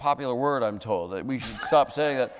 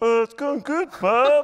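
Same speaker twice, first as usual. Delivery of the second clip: put-on frog puppet voice, higher and louder; 12 semitones higher, 5 dB louder than usual. Retelling a chat in the dark with the Kermit performer: Kermit voice. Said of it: "He's like".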